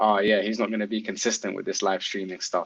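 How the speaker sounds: plain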